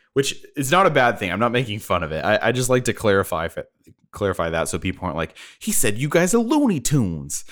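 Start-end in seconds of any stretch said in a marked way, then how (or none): 5.6-7.5 swooping, pitched-up mobster wiseguy voice. Quoting what people might say about him, sounding like someone from The Sopranos. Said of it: "I sounded like someone from The Sopranos".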